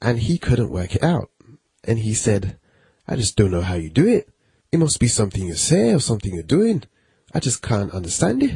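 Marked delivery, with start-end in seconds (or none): 3.1-8.6 bad, terrible put-on Scottish accent, sing-song. Quoting a man who couldn't work out how he made money, bad scottish accent. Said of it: "I know that's a really terrible Scottish accent".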